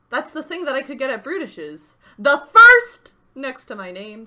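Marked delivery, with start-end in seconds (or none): 2.1-3.1 very loud, very high-pitched shout. On stream, reacting to being among the first subscribers, shouting. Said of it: "Sorry for yelling".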